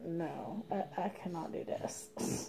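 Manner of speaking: soft, breathy, defeated near-whisper. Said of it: "I was just like".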